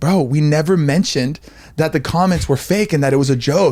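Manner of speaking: plain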